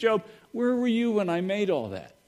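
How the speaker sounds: acted full-tilt sarcasm, high and swooping. Retelling the scene where God speaks to Job: imitating God being sarcastic. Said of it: "God's at his sarcastic best".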